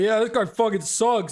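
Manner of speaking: deepened put-on voice. Imagining jeering from ten feet away in a crowd, in a deepened voice. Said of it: "and I'm gonna deepen my voice".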